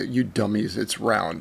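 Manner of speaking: mock condescending, low, soft, talking down. Criticizing a video, quoting the man on astronauts in a mock-condescending tone. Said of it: "he says with this condescending tone".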